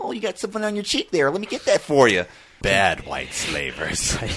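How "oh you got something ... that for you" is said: thin, whiny, very high little voice. Speaker imagines how the man being described would talk, in his whiny little voice. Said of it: "in his whiny little voice being like".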